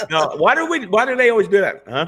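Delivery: ordinary talk, nothing marked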